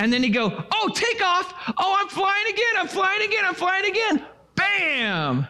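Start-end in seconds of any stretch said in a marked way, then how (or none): 0.7-4.2 very high put-on voice of a flying fish. Retelling how someone swung a hooked fish while voicing it: imitating someone voicing a fish. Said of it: "he would do this narrative of the fish".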